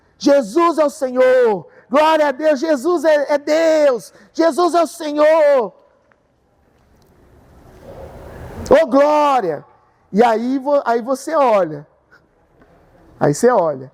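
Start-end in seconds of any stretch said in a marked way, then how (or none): 0.2-9.7 acted-out shout, pitched higher. Acting out someone running down the corridor: imitating someone shouting.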